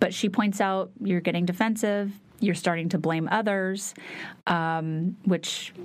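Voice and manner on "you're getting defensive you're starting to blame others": ordinary talk, nothing marked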